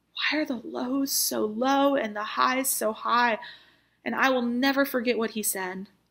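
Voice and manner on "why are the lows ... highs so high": play-acted, desperate-sounding voice. Recounting asking a mentor a question at a low point, in a desperate voice. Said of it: "in this kind of desperate voice".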